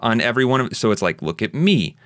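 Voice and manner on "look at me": heavy stress landing on the word "me". Giving a line reading of look at me: stress on me. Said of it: "where you're really putting the emphasis on me".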